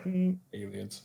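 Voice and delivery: put-on bone-dry delivery with no excitement. Retelling the same character's answer again: imitating a very dry reply. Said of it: "He's just like".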